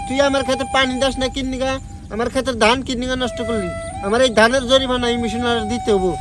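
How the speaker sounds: ordinary delivery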